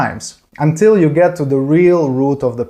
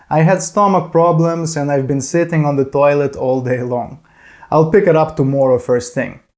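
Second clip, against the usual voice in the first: ordinary talk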